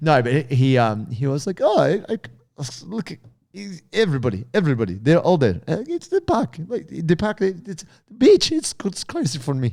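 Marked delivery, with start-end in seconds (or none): 1.6-9.7 put-on swooping Ukrainian accent, pitched up. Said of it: "he sounded Russian".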